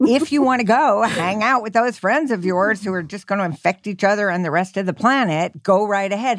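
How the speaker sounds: high, unkind, put-on sarcastic tone. Repeating what the other person said, but less nicely than they did: saying it less nicely, put on. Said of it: "you said it more nicely than I'm saying it right now".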